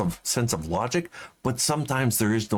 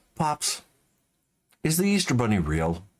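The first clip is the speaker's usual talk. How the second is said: mock earnest, grave, suddenly serious tone. Retelling how Bobby suddenly asked a question: imitating Bobby asking seriously. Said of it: "he gets real serious all of a sudden".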